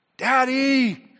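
put-on very high, very loud small child calling out. Retelling hearing a young daughter from her bed: imitating a child calling out. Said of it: "I hear my youngest daughter call".

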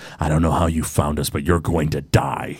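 muttering under his breath. A game master voices a robed enemy facing a player's character, muttering under his breath. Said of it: "he mutters something under his breath".

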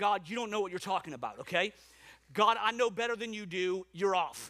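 ordinary talk, nothing marked

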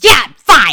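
very loud, high-pitched, curt, snapping retort. Retelling a stranger's question at an airport gate: imitating a snapped reply. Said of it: "snapped at her".

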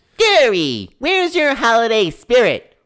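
shrill, booming, very high, bouncy sing-song cartoon squeal. [name], asked just before they go, does his SpongeBob impression. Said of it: "[name]'s going to do his SpongeBob impression".

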